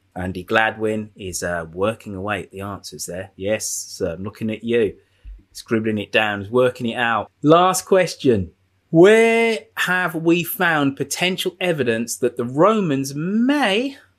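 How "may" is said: strong stress leaning hard on "may". Quiz host reading the last question, stress on "may". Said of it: "stress on the word may".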